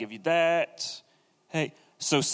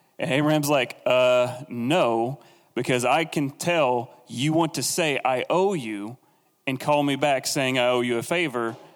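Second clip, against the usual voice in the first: usual speaking voice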